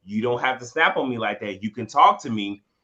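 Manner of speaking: ordinary talk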